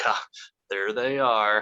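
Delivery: mimicked chuckle while talking. Retelling how he slowly turns around in the scene, acting out a chuckle while speaking. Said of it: "He just chuckles like".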